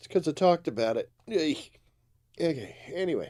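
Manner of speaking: loud, high-pitched speech through a yawn. Apologizing to listeners for yawning, speaking through a yawn. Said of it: "I feel another one coming on".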